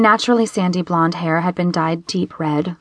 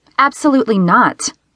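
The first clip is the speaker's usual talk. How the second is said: curt, sharp, cutting, snapped tone; 4 semitones higher, 4 dB louder than usual. First-person narrator reads their own refusal to the group; snapping. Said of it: "I snapped".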